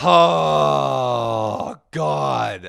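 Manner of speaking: very loud heavy sigh. Retelling a friend's reply to a request: imitating a heavy sigh. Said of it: "Like the hardest sigh I ever heard".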